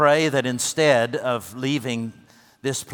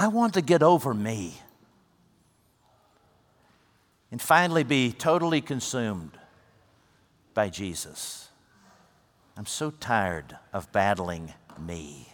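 imitated weary, tired voice; 2 semitones lower, 3 dB quieter than usual. Retelling a woman's reply when asked if she wanted to go home, imitating a weary voice. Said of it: "she said very wearily".

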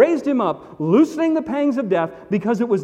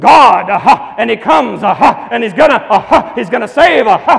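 very loud, hacking preacher voice, gasp-broken with "aha"s; 9 dB louder than usual. Describing preachers heard on the radio in the South, the speaker does a hacking preacher, gasping 'aha'. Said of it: "Have you ever heard the hacking preacher?".

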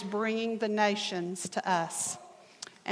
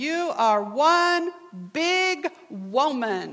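mock proud, very drawn-out, pitched up; 5 semitones higher, 4 dB louder than usual. Retelling what an English student said to the speaker: imitating someone saying it proudly. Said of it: "he said very proudly".

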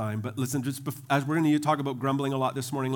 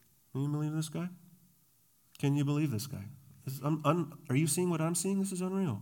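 hushed, half-whispered aside; 2 semitones higher, 5 dB quieter than usual. Acting out someone half-whispering to a neighbor about the preacher: imitating a hushed half-whisper. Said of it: "in a hushed whisper".

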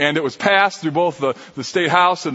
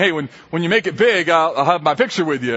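plain

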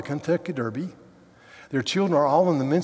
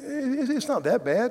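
put-on hesitant, nervous, slow, pitched-up voice; 9 semitones higher than usual. Retelling a woman's reply to her therapist, imitating a nervous reply. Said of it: "And I said nervously".

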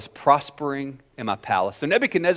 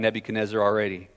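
normal talking voice

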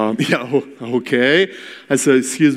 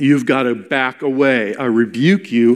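ordinary talk, nothing marked

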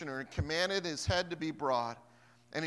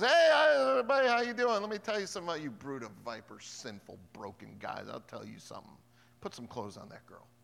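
swooping, animated preaching with big pitch swings; 3 semitones lower than usual. Retelling a biblical scene, acting out John preaching. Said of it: "And John comes up and goes".

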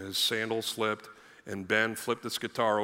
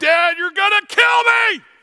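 very high, very loud, shrill screaming wail; 17 dB louder than usual. Retelling a child's panic over a broken guitar: imitating Ben screaming and crying. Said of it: "he's screaming and crying and freaking out".

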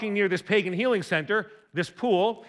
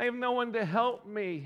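put-on whine, quieter and slower; 2 semitones higher, 8 dB quieter than usual. Speaker quoting a bitter man's reply, in a mock-whiny voice. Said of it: "Sounds like a bit of a whiner".

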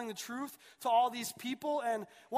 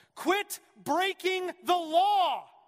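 loud, slow, high, deliberate shout; 7 semitones higher, 7 dB louder than usual. Retelling a movie scene where a lawyer answers the phone: imitating a yell. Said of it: "He picks up the phone and he yells".

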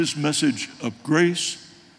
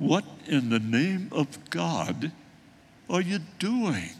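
put-on motherly voice, quieter; 2 semitones higher, 5 dB quieter than usual. Retelling what the speaker hears God's voice say, voicing God's mother voice. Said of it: "I hear God's mother voice saying to me".

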